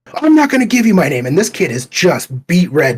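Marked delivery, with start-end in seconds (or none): 0.2-1.3 very pitched-up, shrill, furious yelling. Retelling what the table worker yelled in their face: imitating someone screaming. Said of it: "just screaming at me".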